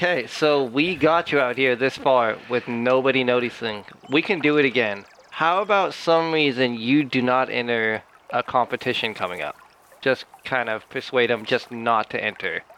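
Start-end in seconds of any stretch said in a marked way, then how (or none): none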